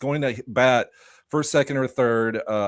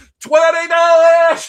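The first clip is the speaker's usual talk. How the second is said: very high, very loud holler; 12 dB louder than usual. Retelling shouting a bid for Brent Rooker from the bathroom: retelling a yelled bid. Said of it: "yelling bids".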